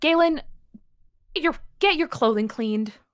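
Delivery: high yell, muffled as through door. Tabletop game scene, Leon calls to Galen through the door: Leon yelling through a door. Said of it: "Leon yells through the door".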